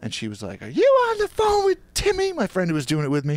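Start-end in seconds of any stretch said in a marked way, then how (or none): 0.6-2.3 shrill, swooping, very high, loud voice. Retelling mom catching a prank call: imitating mom's high loud voice. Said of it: "She's very high, loud voice".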